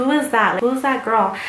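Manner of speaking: playful, mock-jealous, joking and sarcastic tone. Retelling a joke made in front of Rebecca: acting out a sarcastic joke. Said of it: "just being sarcastic".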